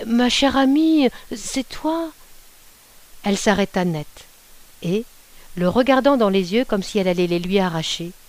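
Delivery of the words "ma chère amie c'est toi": meek, timid, slow, pitched-up voice. A husband answers his scolding wife; murmured timidly. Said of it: "Il murmura timidement".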